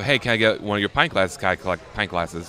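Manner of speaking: ordinary delivery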